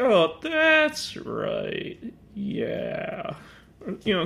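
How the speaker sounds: very slow, condescending, every word stretched long. Imagining how a woman they're discussing would sound, with elongated, drawn-out words. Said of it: "where she elongates her words a little bit".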